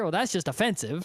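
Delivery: ordinary delivery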